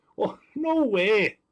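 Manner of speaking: strong Wisconsin accent. Speaker reacting in disbelief to a count of blasters, strong Wisconsin accent. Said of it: "my Wisconsin accent here coming out big time".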